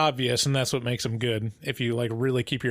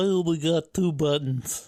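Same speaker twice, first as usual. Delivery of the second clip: put-on slow, little kid voice; 4 semitones higher than usual. Retelling a scene from the show: little Luke impression. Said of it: "That's my impression of, of little Luke".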